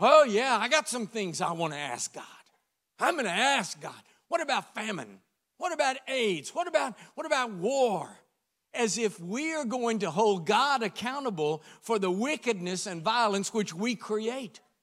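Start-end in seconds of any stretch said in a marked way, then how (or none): 0.0-8.1 booming, very loud, self-important, arrogant demanding tone. Speaker mocks agnostic movie stars saying what they'd ask God: mocking an arrogant tone. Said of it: "get this tone in their voice".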